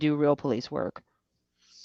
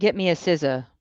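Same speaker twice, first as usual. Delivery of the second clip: ordinary talk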